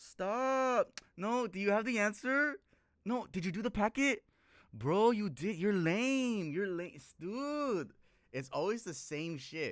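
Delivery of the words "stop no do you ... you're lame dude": loud, high-pitched put-on Mexican high school girl accent. Imitating a high school girl talking to her friends, in a Mexican high school girl accent. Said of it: "the Mexican girl accent like like in high school".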